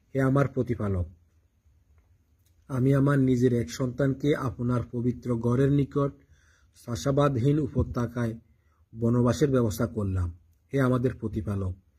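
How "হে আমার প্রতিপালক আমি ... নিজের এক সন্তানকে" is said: ordinary delivery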